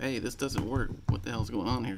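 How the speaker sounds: usual speaking voice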